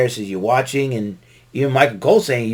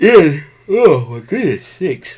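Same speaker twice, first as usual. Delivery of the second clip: talking mid-yawn, words stretched out; 4 semitones higher, 5 dB louder than usual. Trying to stay awake while recapping the matches for listeners, yawning. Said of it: "Forgive me for yawning".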